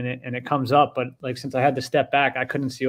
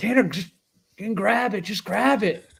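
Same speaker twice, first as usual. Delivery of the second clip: frantic, high, panicked yelling; 8 semitones higher than usual. Retelling a big fish jumping against the boat, retelling panicked yelling at Tanner. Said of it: "yelling at Tanner".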